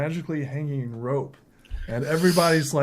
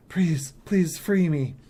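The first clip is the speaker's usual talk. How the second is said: put-on begging, pleading little boy's voice; 4 semitones higher than usual. Voicing a chained little boy begging a player: pleading little boy. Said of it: "this little boy who's chained to this, uh, uh, uh, pillar is like".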